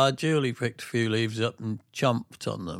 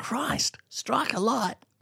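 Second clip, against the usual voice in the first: unconvincing, fake Australian accent, very high-pitched; 11 semitones higher than usual. Speaker attempts an accent a listener says doesn't pass muster: bad Australian accent. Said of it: "your Australian doesn't pass muster".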